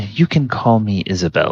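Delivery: discreet, confidential delivery. A game master voices a character introducing herself to the players: Isabel, speaking rather quietly. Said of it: "she speaks rather quietly".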